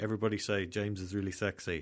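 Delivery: ordinary talk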